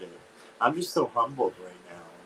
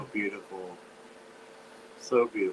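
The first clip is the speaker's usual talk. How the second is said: tearful, welling-up delivery. Reacting with another speaker to a miracle video: teary voice. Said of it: "her eyes are leaking".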